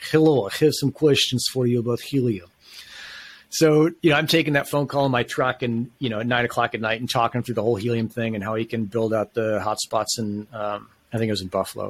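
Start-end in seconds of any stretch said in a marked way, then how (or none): 0.1-2.5 put-on heavy Russian accent. Recalling a late-night caller asking about Helium, the speaker imitates him: heavy Russian accent. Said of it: "what I would call a Russian accent".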